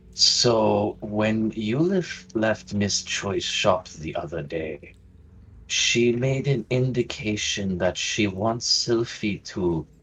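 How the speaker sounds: very hushed, quick, secretive undertone. Hanging back as the others move on, turning to another character: hushed tone. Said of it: "in a very hushed tone".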